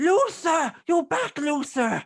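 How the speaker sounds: shrill, entitled-sounding, very high, loud, swooping cry. As the cart nears, a voice calls out to Luther, shrill and entitled. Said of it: "you hear a shrill voice going".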